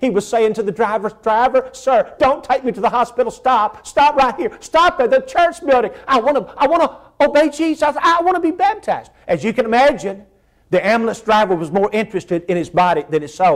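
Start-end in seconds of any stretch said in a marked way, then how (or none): 1.2-9.1 mock begging, high and urgent pleading. Retelling a dying man's words to the ambulance driver, acting out pleading and begging. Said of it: "just pleading for another opportunity to obey Jesus".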